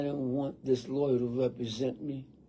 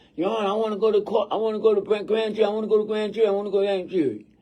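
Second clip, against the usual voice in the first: very loud, high screaming, words tumbling out fast; 8 semitones higher, 9 dB louder than usual. Retelling being rushed out of the courtroom, imitating someone screaming. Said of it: "I'm screaming to the judge".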